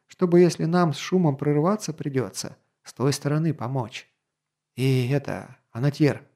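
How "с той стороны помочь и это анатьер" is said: plain reading voice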